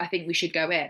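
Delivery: ordinary delivery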